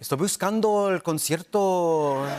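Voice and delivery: dramatic, sing-songy Mexican Spanish accent. Comparing Spanish accents by country, speaking in a sing-songy Mexican accent. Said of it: "so Mexico is kind of a sing-songy".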